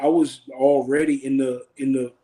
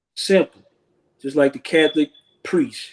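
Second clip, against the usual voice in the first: ordinary talk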